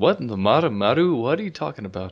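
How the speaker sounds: questioning, query-like intonation. Retelling a scene from the story, imitating CJ's questioning tone. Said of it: "said the motto in a questioning tone".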